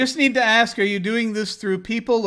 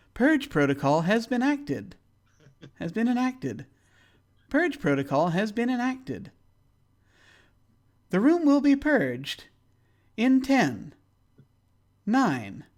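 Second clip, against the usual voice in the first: very pleasant voice, higher; 3 semitones higher, 3 dB quieter than usual. Voicing a voice pinging into the room with a countdown: very pleasant voice. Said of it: "Hear a very pleasant voice".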